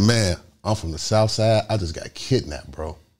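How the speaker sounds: ordinary delivery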